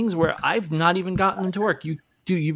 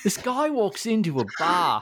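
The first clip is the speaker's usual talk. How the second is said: put-on, sing-song Australian accent; 2 semitones higher than usual. Starting a dad joke, in a put-on accent. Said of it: "that accent was awesome".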